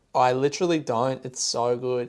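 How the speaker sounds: usual speaking voice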